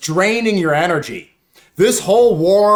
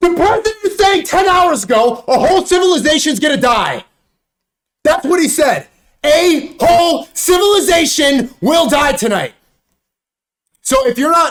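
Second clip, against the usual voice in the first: high, frantic, panicked screaming; 8 semitones higher, 3 dB louder than usual. Crashing out while talking to you guys, screaming. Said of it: "my bad, I'm screaming".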